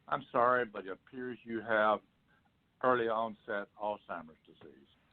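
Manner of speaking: stiff, toneless, very monotone level delivery. Retelling a doctor giving a diagnosis: imitating a very monotone voice. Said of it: "talk in a very monotone voice".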